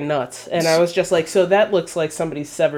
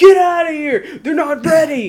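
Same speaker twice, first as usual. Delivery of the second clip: mock scream, higher and louder; 11 semitones higher, 5 dB louder than usual. Retelling a scene where a worker yells at the visitors: imitating someone screaming. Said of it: "fucking screaming at him".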